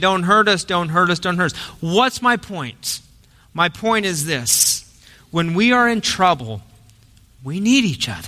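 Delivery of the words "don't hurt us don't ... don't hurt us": ordinary talk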